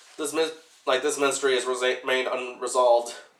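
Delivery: ordinary delivery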